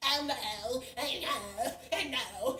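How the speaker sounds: mock very slow, drawn-out sassy drawl. Retelling how a man spoke to her: imitating a sassy tone. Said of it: "talking to me sassy".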